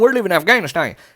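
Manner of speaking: put-on, laid-on American southern accent. Speaker mocks the propaganda that keeps coming up, in a southern accent. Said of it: "I keep doing it in southern voices".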